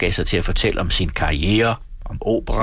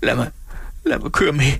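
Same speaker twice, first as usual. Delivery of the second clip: high, quivering, trembling, stuttering voice; 5 semitones higher than usual. Narrator reads a character answering another's question, stammering in a trembling voice. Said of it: "stammede Emil med dirrende stemme".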